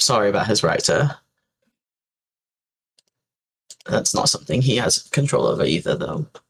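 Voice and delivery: amused, half-laughing, light chuckle throughout. Voicing a female character's reply, the narrator speaks with a little chuckle. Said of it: "a little bit of like a chuckle in her voice".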